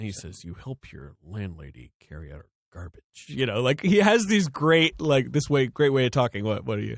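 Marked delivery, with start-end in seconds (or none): 0.4-3.2 very low, deep, hushed, quiet voice. Retelling a movie scene about Neo, imitating the agent: Hugo Weaving as Agent Smith. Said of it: "that is an incredible impression".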